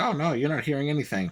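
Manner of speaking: ordinary talk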